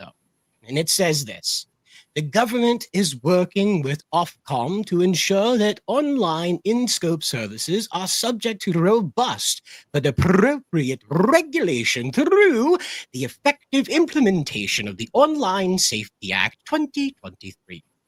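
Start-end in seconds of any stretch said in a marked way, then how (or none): 2.1-17.8 put-on British accent, sing-song with swooping pitch. Reading out the government's response to the petition, British accent. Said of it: "I'll drop the British accent for the rest of this".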